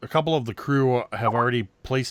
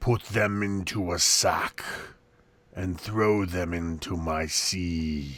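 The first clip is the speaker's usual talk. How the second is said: watery, gurgling, bubbling turtle creature voice, lower; 5 semitones lower, 3 dB quieter than usual. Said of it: "this kind of watery, and it's gurgles and bubbles".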